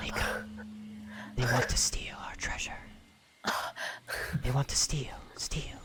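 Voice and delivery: tiny, faint, barely audible whisper. Voicing a mysterious voice heard in the mind: tiny whisper. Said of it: "There's this tiny whisper, and it says".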